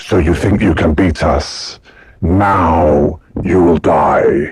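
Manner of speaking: electronically altered, voice-changer sound. Recounting what this being said to him, with a voice-changer effect. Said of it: "I'll do a voice changer to, to give the effect".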